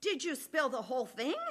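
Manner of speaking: very loud, high, carrying shout. Retelling what a man said from the back, retelling a very loud call. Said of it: "in a very loud voice".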